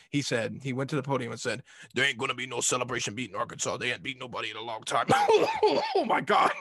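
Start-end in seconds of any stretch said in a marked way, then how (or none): 1.9-5.0 strained put-on voice from the throat. Retelling what he said at the podium, Coach O voice. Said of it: "that Coach O always gets my vocal cords all messed up".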